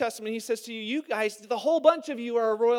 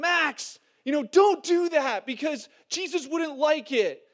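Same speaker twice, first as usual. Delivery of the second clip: put-on child's loud shout; 5 semitones higher, 3 dB louder than usual. Retelling one boy yelling at another boy, imitating Finn yelling. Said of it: "you hear Finn yelling at Max".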